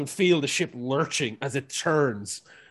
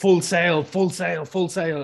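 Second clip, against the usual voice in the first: barking, yelling; 5 semitones higher, 6 dB louder than usual. Narrating a ship scene, she starts shouting orders at the crew. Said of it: "starts shouting orders at the crew".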